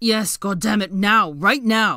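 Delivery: very loud, frantic and desperate tone. Narrator reading a character urging a woman to hurry, frantic tone. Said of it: "Spurred on by his frantic tone".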